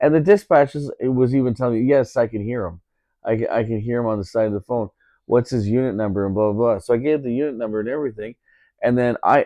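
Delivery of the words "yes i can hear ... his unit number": normal talking voice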